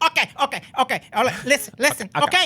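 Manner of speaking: put-on yelling tough voice. Doing an impression for the others: Joe Pesci impression. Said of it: "your Joe Pesci has a little Tony Montana in it".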